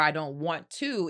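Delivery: ordinary delivery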